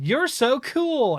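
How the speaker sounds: high, slow, sarcastic admiring tone. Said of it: "it sounds so sarcastic".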